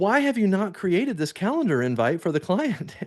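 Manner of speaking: fed-up, high, swooping tone. Retelling a boss confronting an employee over a missing invite: imitating an exasperated boss. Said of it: "he's exasperated".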